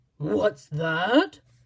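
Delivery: loud, very gruff, growling bear voice. A big bear growls at a rabbit, terribly gruff growl. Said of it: "growled a voice that was terribly gruff".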